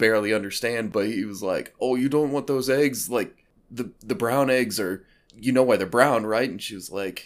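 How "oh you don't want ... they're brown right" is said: put-on heavy, thick Jersey accent, loud. Retelling what the guy behind the counter said, in a thick jersey accent. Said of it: "had this like thick Jersey accent".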